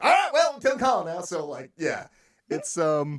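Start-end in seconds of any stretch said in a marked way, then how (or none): 0.0-1.2 very high, cheery, bouncy, upbeat voice. Showing how the villain Bob delivers a line: happy, upbeat. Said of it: "you gotta do it in this happy, upbeat".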